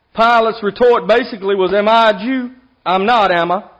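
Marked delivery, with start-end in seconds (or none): 1.7-3.6 slow, put-on sarcastic tone. Retelling Pilate's retort to Jesus: imitating a sarcastic retort. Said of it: "Kind of sarcastically".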